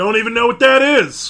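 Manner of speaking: loud, high, dismissive coach voice, brushing off. Voicing the coach addressing the team as maggots: voicing the coach. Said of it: "The coach walks off".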